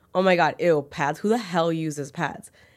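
ordinary talk

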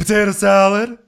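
bright upbeat voice. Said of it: "She's so cheery about it".

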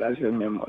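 tearful voice, speaking through tears. Thanking a spouse after a loving message, crying while talking. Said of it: "¿Está llorando?".

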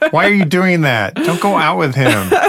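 put-on shouting. Acting out how they yell at The Bachelor on television: imitating yelling at the TV. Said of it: "I will yell at the television".

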